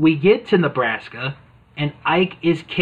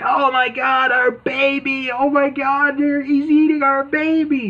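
put-on very high, very slow, drawn-out screaming; 10 semitones higher than usual. Retelling a cartoon scene where the parents scream: imitating parents screaming. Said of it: "the parents are screaming".

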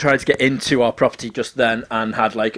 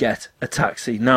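usual speaking voice

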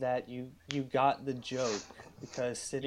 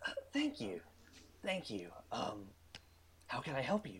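flustered, bashful, soft, polite voice with swooping pitch; 7 dB quieter than usual. Voicing the Minotaur clerk after a compliment: bashful Minotaur clerk. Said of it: "coughs and looks away with, like, a little bit of blush".

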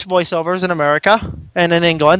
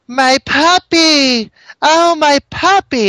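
put-on very slow, high, drawn-out little girl voice; 9 semitones higher, 4 dB louder than usual. Recalling a game's English voiceover, mimicking it in a little girl voice. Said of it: "you have like a little girl going".

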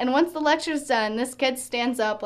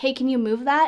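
imitated whisper. Retelling how a classmate asked during a lecture: imitating someone whispering.

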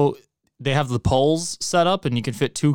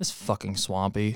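muttered under breath, lower and much quieter; 5 semitones lower, 8 dB quieter than usual. Speaker recounts his reaction alone to another's theater post: muttered under breath. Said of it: "I said out loud by myself under my breath".

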